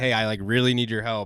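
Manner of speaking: mock frantic, desperate voice. Retelling a game scene, quoting a character asking for help: imitating a frantic plea. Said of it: "kinda a little frantic".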